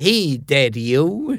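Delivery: put-on hippie beatnik hipster accent. Retelling hippies at a commune on a TV show, in a beatnik accent. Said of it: "doing beatnik accents".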